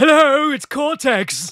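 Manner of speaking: put-on high character voice with quasi-British accent. Greeting the host back in character: good Cortex voice. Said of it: "you do a good Cortex".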